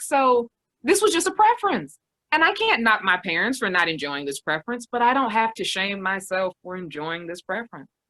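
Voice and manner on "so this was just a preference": playful high-pitched tone. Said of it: "it's like".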